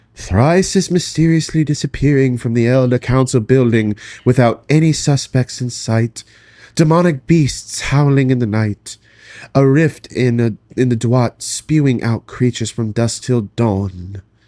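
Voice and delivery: put-on eerie, spooky voice, "dawn" drawn out. A woman passing on rumours she has heard, in an attempted spooky voice. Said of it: "says in an attempt at a spooky voice".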